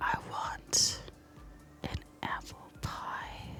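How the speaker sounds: sultry, slow, drawn-out breathy whisper. The speaker jokingly tries to seduce an apple pie for Tony: slow and seductive. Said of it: "What if I say it slow and seductive?".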